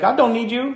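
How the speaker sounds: put-on sassy Valley Girl voice. Saying a line about God with a little edge, edgy Valley Girl attitude. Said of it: "I want to say it with a little bit of an edge, a little Valley Girl stank on it".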